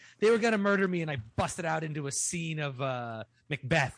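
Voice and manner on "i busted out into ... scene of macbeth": normal talking voice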